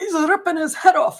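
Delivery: clumsy fake Irish announcer accent, high and slow. Recalling the announcer's call at a fight, very bad irish accent. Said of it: "very bad Irish accent".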